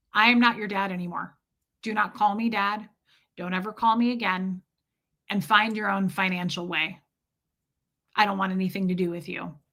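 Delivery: put-on icy father voice, dead, cold, matter-of-fact. Retelling dad turning around on the stairs: imitating dad, cold as ice. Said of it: "cold as ice, he says".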